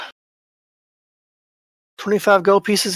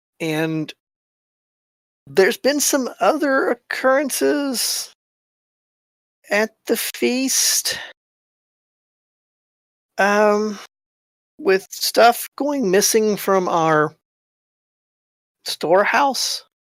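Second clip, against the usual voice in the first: nervous voice, higher, slow and halting. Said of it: "you can tell he's nervous. He's sweating bullets nervous".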